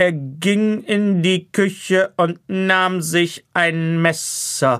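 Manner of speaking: put-on pointed narrator voice, sharply accented, every word stressed. Imitating the wife's kitchen parody of a narrator, every word sharply stressed. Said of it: "Sie betont so akzentuiert und so scharf".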